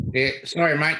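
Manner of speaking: put-on Australian accent. Apologizing to Chris for saying Potomac wrong, in a put-on Aussie accent. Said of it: "That was my Aussie accent then".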